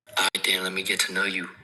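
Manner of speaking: sexy, seductive, sultry voice. Playing along in a get-to-know-you voice memo bit, sexy voice. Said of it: "are both doing sexy voice".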